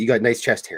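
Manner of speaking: ordinary talk, nothing marked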